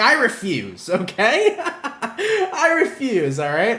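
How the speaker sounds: mock sassy attitude, very high and very slow. Voicing what a Scorpio would say, in a very sassy tone. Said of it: "in like a very sassy tone".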